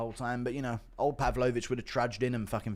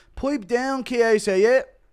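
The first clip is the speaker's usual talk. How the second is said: shrill, very loud, slow, high bellowing taunt; 13 semitones higher, 13 dB louder than usual. Doing an impression of Connor telling Chiesa to pipe down. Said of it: "Impression of Connor telling Chiesa to pipe down".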